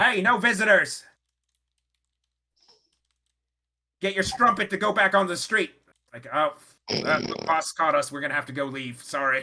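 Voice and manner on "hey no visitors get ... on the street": loud, high hollering. Narrating a scene, a voice from the manager's office above calls out. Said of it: "You can hear called out".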